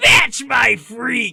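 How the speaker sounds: loud shout. Imagining the phrase shouted in the Frieza voice: Frieza voice shouting. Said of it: "the Frieza voice just shout".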